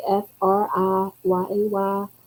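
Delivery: very slow, drawn-out Southern twang. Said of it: "with that southern s-, s-, accent".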